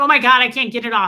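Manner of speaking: mock very loud, frantic, panicked outcry. Retelling being stuck with a too-tight ring in a store: imitating panicking. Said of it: "I start panicking".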